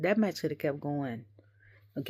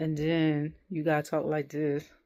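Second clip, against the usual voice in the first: ordinary delivery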